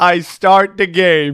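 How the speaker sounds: excited, loud, slow outburst with laughter.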